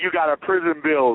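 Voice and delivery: ordinary talk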